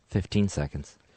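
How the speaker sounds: hushed, soft half-whisper. Counting seconds aloud during a timed trash can challenge: half-whispering. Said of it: "Why are you whispering like we're".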